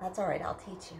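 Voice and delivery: ordinary talk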